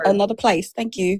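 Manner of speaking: full put-on British accent. On a phone call, telling the caller they have the wrong number, put-on British accent. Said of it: "I've gone full British on them before".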